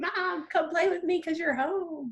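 high-pitched, eager dog voice. Speaker describes her dog jumping on her; impression of her dog. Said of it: "That was a really good impression".

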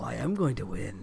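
very low, very quiet, hushed, rough, creaky rumble. Gamer recounting a conversation between Aloy and Hades, in Hades voice. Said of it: "in his Hades voice".

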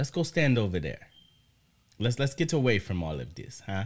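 put-on speaking in Jamaican accent. Retelling what he said to her at the pajama jam: imitating a Jamaican accent. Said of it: "you're gonna do the Jamaican accent".

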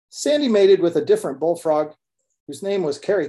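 ordinary delivery, nothing marked

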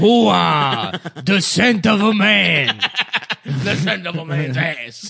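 slow, exaggerated tough-guy movie-star voice.

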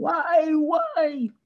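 shrill, very high screamed cry. Telling a joke about a man in the desert, retelling a scream. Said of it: "And he starts screaming".

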